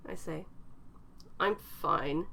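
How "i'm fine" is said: forced through gritted, clenched teeth. Narrator reading a driver's reply to a passenger, said through gritted teeth. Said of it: "he says through gritted teeth".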